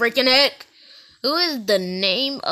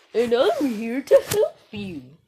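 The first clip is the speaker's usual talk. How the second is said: high-pitched, stylized puppet character voice; 7 semitones higher than usual. Video maker attempting the FNAF Puppet's voice, Puppet voice from FNAF. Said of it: "It's kind of difficult to do Puppet's voice".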